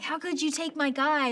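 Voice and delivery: high, loud screamed outburst. Actor recalls a favorite movie scene, acting out screaming at another character. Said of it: "I'm screaming at Taffy and I'm like".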